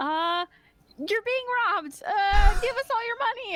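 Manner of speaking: shrill, very high, loud yell. Voicing a character caught in a barrel, yelling in character. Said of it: "and then she yells".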